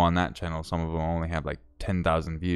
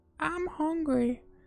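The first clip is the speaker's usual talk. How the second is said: very high put-on woman's voice. Recalling a wife's line from a video, the speaker tries a female voice. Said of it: "And I did that exact voice".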